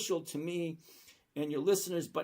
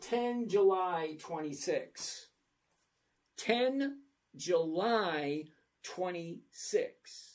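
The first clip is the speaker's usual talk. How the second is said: slow, careful word-by-word delivery, "July" drawn out. Explaining an option's expiry date step by step, saying it slow. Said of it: "I'm going to say it slow".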